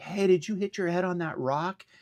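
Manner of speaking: loud, high-pitched yell. Retelling calling out to an injured man; retelling a yell. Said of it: "I yelled at him".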